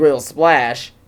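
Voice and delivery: ordinary talk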